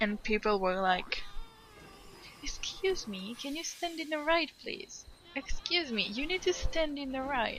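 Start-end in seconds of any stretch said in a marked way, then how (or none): 2.4-7.6 play-acted anger, very polite, pitched higher. Retelling how people asked a cousin to stand on the right: imitating politely angry people. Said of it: "angry, but angry in a very polite way".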